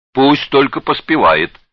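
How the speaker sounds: merry, glad, high-pitched cheerful cry. Hearing a man rejoice over future grandchildren, another man answers: cheerful exclamation. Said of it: "весело воскликнул Зых".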